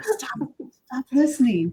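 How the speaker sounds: high-pitched stage half-whisper. Retelling talking to a phone that listens: imitating own half-whispering. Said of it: "whispering away from my phone".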